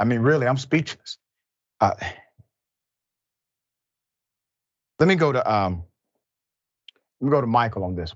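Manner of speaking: getting choked up, emotional voice. A speaker recalling a scene hands over to Michael, choked up. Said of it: "Getting a little choked up".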